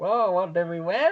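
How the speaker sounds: high-pitched robot voice. Retelling a scene where the droids are activated: imitating the battle droids. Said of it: "that was a good impression".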